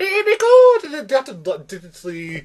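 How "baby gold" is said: put-on Scottish-sounding leprechaun accent, higher and louder. Mocking an actor's leprechaun accent in a film: Scottish-sounding Irish accent imitating Gerard Butler. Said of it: "Scottish, he goes".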